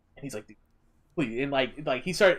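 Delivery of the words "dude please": usual speaking voice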